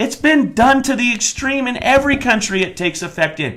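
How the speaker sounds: high, loud, angry, worked-up belted outburst. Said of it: "I'm sorry I'm so worked up".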